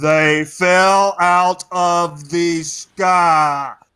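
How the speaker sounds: very slow, very loud, deliberate, word by word. Relaying news through a crystal to the other player, very slow. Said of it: "I'll say it really slow into the crystal".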